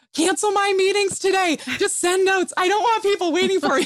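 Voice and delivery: put-on very high, loud yelling. Retelling the moment before leaving for the hospital in labor: imitating her own past yelling. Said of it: "I was yelling at my husband".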